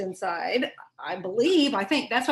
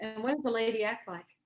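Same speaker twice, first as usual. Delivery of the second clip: plain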